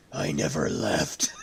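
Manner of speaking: really raspy, rough, hoarse, scratchy voice. Recalling the replacement voice actor in Hitman Absolution, doing a raspy voice impression. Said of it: "this guy with this really raspy voice".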